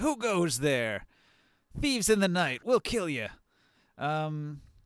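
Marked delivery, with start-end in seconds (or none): 0.0-3.3 high-pitched called-out voice. The one with the crossbow, after shouting at his friends, shouting a challenge. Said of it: "the one with the crossbow will shout".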